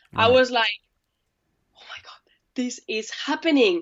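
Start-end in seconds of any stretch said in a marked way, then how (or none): 1.8-3.8 bursting, elated excitement. Recalling the moment the dream started happening, retelling own excited exclamation. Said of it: "So the high was massive".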